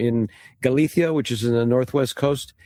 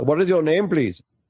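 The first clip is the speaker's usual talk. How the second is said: put-on Indian accent, pitched up; 5 semitones higher than usual. Retelling a phone call, quoting the man from India who answered, imitating an Indian accent. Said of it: "I'll do his voice".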